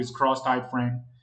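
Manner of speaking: plain reading voice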